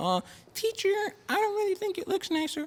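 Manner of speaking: put-on childlike, very high, swooping kid voice. Speaker retells talking to a teacher in class as a kid, in a high-pitched kid voice. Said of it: "this is my high pitched voice in class".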